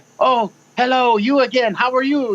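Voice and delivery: put-on slow, unhurried, high French accent. Speaker quoting a french journalist who greeted him on the street, in a french accent. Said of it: "with her French accent".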